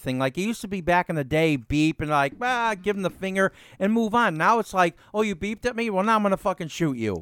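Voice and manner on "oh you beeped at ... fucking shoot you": put-on offended tone. Imitating drivers who take offense at a beep: mock offended driver. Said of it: "people get so fucking offended by everything".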